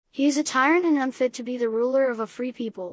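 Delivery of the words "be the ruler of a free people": ordinary delivery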